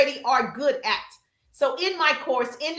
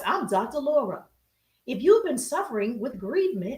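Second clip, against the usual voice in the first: calm, gentle, put-on soothing therapist voice; 3 dB quieter than usual. Playing a therapist greeting viewers for a joke: put-on soothing therapist voice. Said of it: "soothing voice".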